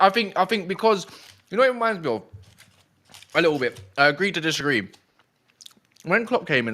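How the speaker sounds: talking while eating, mouth full. Speaker in a group conversation, talking while eating cake. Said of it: "sorry, I'm just eating cake".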